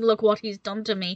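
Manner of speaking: ordinary talk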